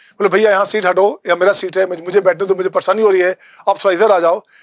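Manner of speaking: ordinary delivery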